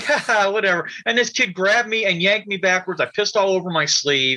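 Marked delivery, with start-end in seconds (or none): 0.0-0.9 careless, dismissive laugh through the words. Retelling how the monitor laughed off his complaint: imitating a monitor laughing. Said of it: "He just starts laughing".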